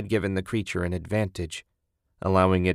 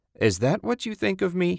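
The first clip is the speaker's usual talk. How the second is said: very high, laughing through the words; 11 semitones higher than usual. In the dark car, Ted answers Susan's jab, laughing. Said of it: "Ted laughed".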